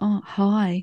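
put-on, smitten schoolboy voice. Retelling a priest's greeting to a woman at confession, imitating a smitten schoolboy. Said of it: "Like a schoolboy".

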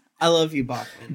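said with malice. Answering another player after a card pull, said with malice. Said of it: "with the most malice I've ever said".

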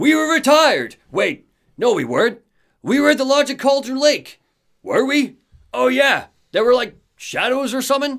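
very high, confused, rambling voice. Acting out what the Anderson brothers say to each other, imitating the confused Anderson brothers. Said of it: "But they sound a little bit confused".

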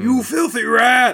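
very high-pitched, shrill screaming yell. In a fight against zombies, one fighter turns on another, screaming. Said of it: "Skulls screamed at the Panda Man".

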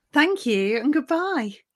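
proper news-anchor voice. Asked to say goodbye at the end of the show, the speaker uses a formal newsreader voice. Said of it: "I was like properly newsreader voice".

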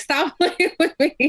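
high, slow laughing disbelief.

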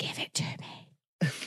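hushed whisper. Urging someone on while a recording is running: whispering. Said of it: "stop whispering".

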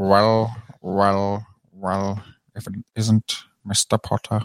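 every word stretched out, very slow. Asked for an impression, doing Professor Snape greeting Potter: Professor Snape impression. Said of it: "What's your Professor Snape?".

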